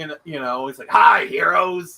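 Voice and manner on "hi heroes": very loud, rough, raspy belting voice. Retelling video snippets from a comics CD: imitating Stan Lee. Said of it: "video snippets, uh, from Stan Lee".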